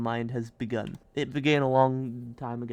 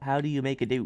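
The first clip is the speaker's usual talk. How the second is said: put-on Australian accent. Speaker repeats a question someone asked, in an Australian accent. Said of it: "in an Australian accent".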